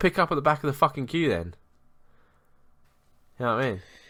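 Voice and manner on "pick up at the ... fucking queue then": worked-up, heated, high-pitched ranting. Speaker retells telling people at a gig to go to the back of the queue, retelling his own yelling. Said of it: "going fucking mental at them".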